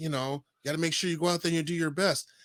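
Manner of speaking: put-on, mock condescending voice. Retelling a backstage pep talk: imitating CM Punk's condescending tone. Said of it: "he said it just in that tone too".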